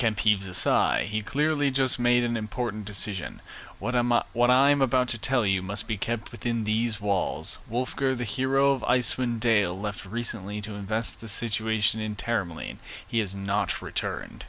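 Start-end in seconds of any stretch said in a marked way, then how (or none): none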